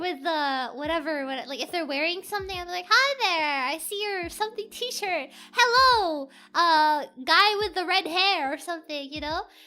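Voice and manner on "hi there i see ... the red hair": loud, cheerful, called-out yelling. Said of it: "like, yelling".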